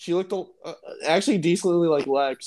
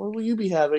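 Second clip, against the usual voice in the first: mock soft-spoken girlish voice; 2 semitones higher than usual. Retelling what a girl asked a friend while taking his order, imitating a soft-spoken girl. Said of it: "she's very soft-spoken".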